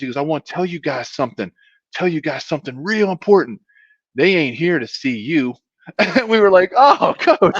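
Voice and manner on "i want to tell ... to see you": put-on southern North Carolina accent. Quoting the coach talking to players at a stretching practice, north carolina accent. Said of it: "he had a wonderful North Carolina accent".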